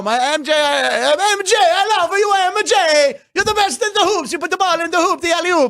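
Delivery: very high, slow, exaggerated Italian accent. Speaker imagines fans in Italy yelling to a basketball star, exaggerated Italian stereotype accent. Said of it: "that very racist Italian stereotype".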